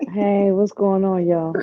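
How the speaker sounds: sultry bedroom voice. Greeting everyone on arriving: bedroom voice. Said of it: "You got the bedroom voice".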